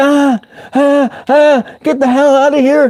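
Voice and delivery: very high, put-on, squealing scream. Retelling being scared by a mouse while editing: imitating own screaming. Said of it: "I'm just screaming like".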